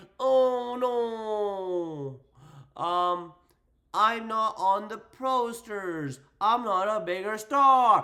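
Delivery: put-on sobbing whine, very slow and drawn out. Mocking a wrestler complaining about the posters, in mock crying. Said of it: "now she's out here crying like".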